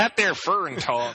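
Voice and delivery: put-on Southern accent. Joking about how people say foreign, the speaker answers in a put-on southern accent. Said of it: "I gotta talk that way for them South Carolinians".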